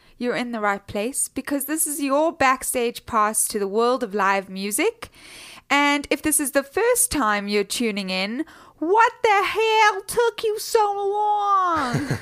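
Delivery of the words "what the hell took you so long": mock American accent, higher pitch. Jokingly welcoming first-time listeners: put-on american accent. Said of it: "good accent".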